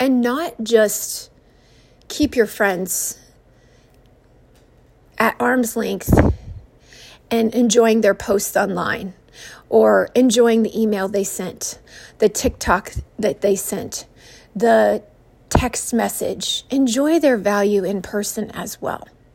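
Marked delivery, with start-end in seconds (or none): 0.0-11.8 emotional, choked-up voice breaking mid-phrase, halting. A podcaster, moved while addressing listeners: choked up. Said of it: "it chokes me up".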